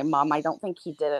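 ordinary talk

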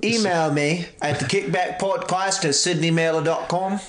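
fake, clumsy Australian accent. Joking with another speaker about an email address, in a trash Australian accent. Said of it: "That is a trash Australian accent".

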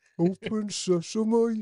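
very high-pitched Birmingham accent. Asked by another speaker to say it in a Birmingham accent, Birmingham accent. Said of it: "Do it in the Birmingham accent".

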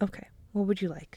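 softly spoken, quiet, hushed voice. Offering the other person a drink, speaking softly. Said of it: "Why are you speaking so softly?".

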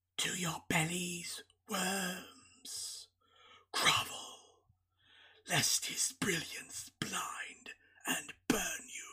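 hissing, dry, raspy whispered voice. Reading a novel prologue aloud, the narrator voices the half-man; dry rasping voice. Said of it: "voice rasped like a dry snake skin crumbling".

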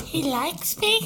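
very high, chain-smoking, cigarette-puffing voice. Imitating the second oldest sister, who was always smoking. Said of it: "She's puffing on her cigarette".

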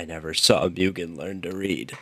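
soft, hushed half-whisper, barely there. Picturing sitting at a friend's deathbed, half-whispering. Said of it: "I'm just gonna whisper".

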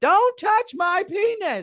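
put-on small child's very high, loud, drawn-out scream. Retelling a three-year-old's outburst in a bathroom: imitating a child screaming. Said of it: "he screams out the whole bathroom to hear".

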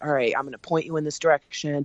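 whispering. Speaker retells whispering a plan into someone's ear, retelling a whisper. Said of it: "I'm whispering in their ear".

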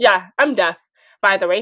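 normal talking voice

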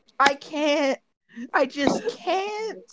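high, helpless giggling, laughing through the words. Someone on the call begs them to stop; laughing uncontrollably. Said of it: "can you stop B- laughing?".

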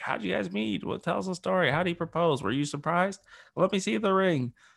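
excited, high, gushing woman's voice. Talking about getting engaged, the speaker mimics people quizzing the couple: imitating women in Atchison. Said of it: "That's my imitation of every woman in Atchison".

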